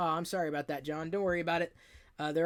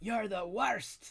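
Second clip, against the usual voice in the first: horrible, badly done put-on Scottish accent; 4 semitones higher than usual. An Agents of Shield fan quoting Fitz, in a horrible Fitz Scottish accent. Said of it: "In my horrible Scottish accent".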